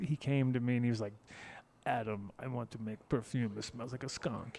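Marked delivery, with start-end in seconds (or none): 1.9-4.6 put-on Italian accent on English words. Retelling what a guy said to him in Amsterdam, imitating Alberto's Italian accent. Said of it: "That's my Italian guy".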